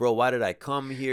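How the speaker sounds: usual speaking voice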